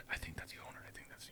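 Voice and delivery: hushed, breathy whispered aside. Retelling kids outside a rink recognizing him: imitating kids whispering. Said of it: "I could hear them whisper".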